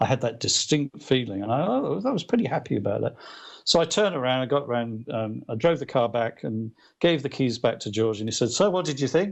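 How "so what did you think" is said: put-on casual, pitched-up Liverpool accent. Retelling a dream, quoting George asking about the drive: imitating George's Liverpool accent. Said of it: "that Liverpool accent's hilarious".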